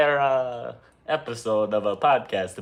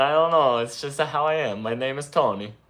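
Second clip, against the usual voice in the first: put-on Italian accent; 3 semitones higher than usual. Pretending to be H P's editor, introducing himself: put-on Italian accent. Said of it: "Why is he Italian?".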